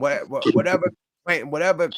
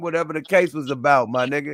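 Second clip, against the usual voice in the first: plain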